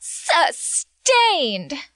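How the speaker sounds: dripping with sass, high-pitched attitude. Showing how a judge's word becomes a catchphrase, said sassy. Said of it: "if you say it with enough sass".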